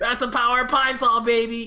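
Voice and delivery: cheesy, high, loud TV-ad yell.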